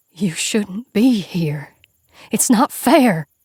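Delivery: whisper like dead leaves. A woman tells the narrator it's not fair, in a creaking whisper. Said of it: "she whispers, a voice like dead leaves creaking".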